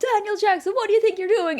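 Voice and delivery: high, loud, angry, barking delivery.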